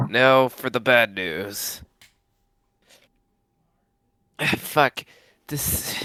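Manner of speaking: put-on, slow ghoul voice, straining hard on throat. Game runner voicing a ghoul character to the players, ghoul voice. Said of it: "doing this ghoul voice fucking hurting my throat".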